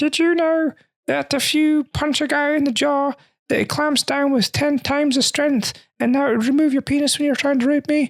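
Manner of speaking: very high-pitched, sassy diva voice. Imagining a Muppet playing the prisoner guy, in a Miss Piggy voice. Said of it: "That's Miss Piggy".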